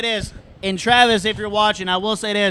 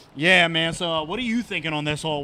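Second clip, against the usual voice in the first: mock cool-sounding talk, lower pitch; 4 semitones lower, 4 dB quieter than usual. Retelling chatting with a friend on the golf course: imitating trying to sound cool. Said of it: "I look at James trying to be all cool".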